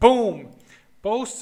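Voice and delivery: very loud, thrilled, excited shout. Showing viewers a result on screen, the speaker is yelling. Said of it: "sorry for yelling".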